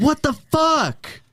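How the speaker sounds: very high, loud, shrieking pained scream. In a role-play, voicing a man whose finger is being broken, screaming. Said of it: "He just screams".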